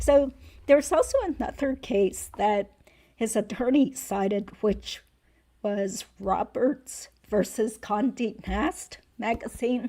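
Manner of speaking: worn, failing voice cutting out on words. Discussing another case the attorney cited, voice failing. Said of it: "my voice is just totally failing here".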